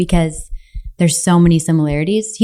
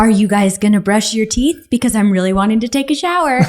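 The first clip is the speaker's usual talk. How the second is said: put-on sweet but annoyed voice, higher; 3 semitones higher than usual. Retelling a son calling downstairs to the girls: imitating Duke's sweet, annoyed voice. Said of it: "kind of sweet voice, kind of annoyed voice".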